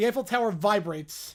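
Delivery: ordinary delivery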